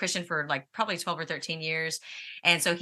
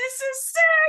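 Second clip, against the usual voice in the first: much higher-pitched, thrilled voice. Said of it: "this guy was like".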